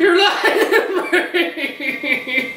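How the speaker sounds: very high, slow, shocked squeal of disbelief.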